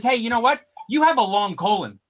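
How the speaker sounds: mock pointed, blaming, accusatory tone. Telling of a man who spoke to him, the speaker quotes him: mock-accusatory tone. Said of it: "he says to me in an accusatory tone".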